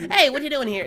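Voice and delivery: very high, toony, full cartoon voice. Imitating how the Dittos sound like the Warner siblings: Warner sibling voice. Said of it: "a fucking Warner sibling kind of voice".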